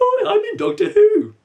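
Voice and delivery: cute, very high, loud teddy bear voice. Speaker voices their own teddy bear: teddy bear voice. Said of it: "me imitating a teddy bear voice".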